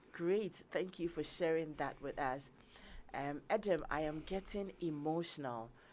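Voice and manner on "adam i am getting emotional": ordinary talk, nothing marked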